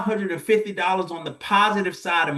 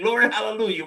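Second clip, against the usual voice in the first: put-on glad, celebrating shout; 3 semitones higher than usual. Retelling the moment of a clear financial picture: retelling a shout. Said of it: "I'm shouting".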